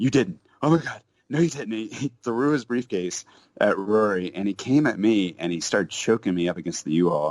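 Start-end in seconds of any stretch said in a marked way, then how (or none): 0.0-1.9 furious, pitched-up angry tirade. Retelling a man with a briefcase tearing into the speaker and a friend: imitating an angry tirade. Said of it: "he just tears into us".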